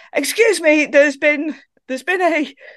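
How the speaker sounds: mock-loud call. Retelling reporting a rule breach at a checkpoint, retelling a very loud voice. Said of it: "with a very loud voice just going".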